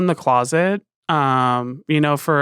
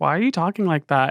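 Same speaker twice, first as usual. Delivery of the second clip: ordinary talk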